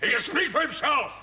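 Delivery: indignant drill-sergeant bark, high-pitched and slow.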